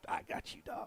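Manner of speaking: half-whispered, hushed, breathy put-on impersonation. Retelling what a player said: Ram impersonation. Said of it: "Is that your Ram impersonation?".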